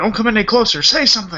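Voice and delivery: mock fierce, all-out, high, vehement yelling. Describing Mark Hamill's straight performance facing Vader: mock-yelling as Mark Hamill. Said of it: "He's yelling at him".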